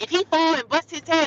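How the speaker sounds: high-pitched scolding holler. Speaker retells a woman yelling at her daughter about the baby, imitating her yelling. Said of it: "she was yelling at her daughter like".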